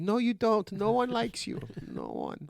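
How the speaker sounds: very high maid voice with strongly swooping pitch. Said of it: "Why do you sound like the maid".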